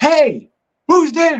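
high-pitched, loud yell. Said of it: "and I yelled".

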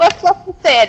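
high alarmed yell. In a role-play scene, a character calls out a question, yelling. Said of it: "I yell".

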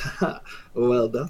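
whispered, breathy, with an amused chuckle. Voicing a stranger who chuckles at the players: chuckling. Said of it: "he kind of chuckles and goes".

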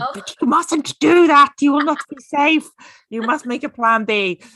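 high-pitched, loud put-on German accent. Describing their inner fear voice, the speaker imitates their dad: German accent. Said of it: "I made my dad sound German".

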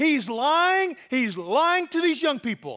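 mock, high, loud accusing yell. Retelling how a woman in the crowd interrupted the preaching: imitating a woman yelling. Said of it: "stood up and began yelling".

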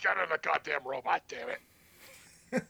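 slow, dragged-out, rough and creaky voice. Voicing Gendo with a borrowed voice: attempted Gilbert Gottfried impression. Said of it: "That sounded more Vince McMahon than Gilbert Gottfried".

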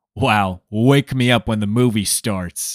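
put-on deep voice. Retelling what a woman said during the movie trailers, deepened voice imitating her. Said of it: "I'm deepening my voice when I'm imitating her".

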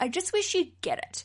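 very high-pitched, put-upon complaining gripe. Imitating how women complaining sound to men: imitating women complaining. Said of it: "what I think most guys think we sound like".

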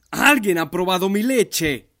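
very loud, roaring, booming big-bear shout. A narrator reads the big father bear's line, shouting very loudly. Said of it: "El oso grande gritó muy fuerte".

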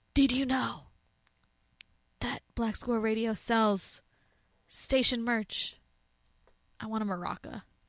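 dramatic delivery.

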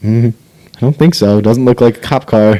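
ordinary delivery

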